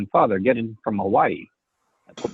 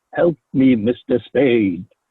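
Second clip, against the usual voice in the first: mock throbbing, pleading voice; 4 dB louder than usual. Telling a woman her pleading is an act, mocking a throbbing plea. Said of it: "that throb you get in your voice when you say things like".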